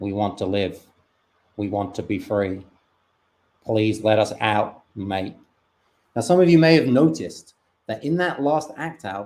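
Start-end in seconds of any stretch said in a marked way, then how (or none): 0.0-5.4 put-on Australian accent. Voicing sperm pleading to be let out: Australian accent. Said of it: "I did the voice of an Australian".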